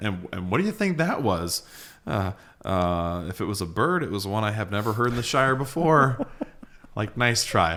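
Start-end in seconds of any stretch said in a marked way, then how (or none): none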